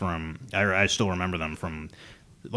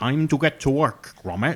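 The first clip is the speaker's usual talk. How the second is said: clumsy, butchered put-on English accent, pitched up; 7 semitones higher, 4 dB louder than usual. Trying out a voice for an orc in Warhammer, addressing Gromit, in a bad Wallace voice. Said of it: "I want the Wallace voice for an orc".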